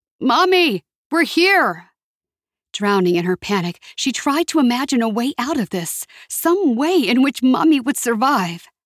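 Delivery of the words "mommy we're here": high shout, calling out through cupped hands. She cups her hands around her mouth and calls out for her mother, shouting. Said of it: "cupped her hands around her mouth and shouted".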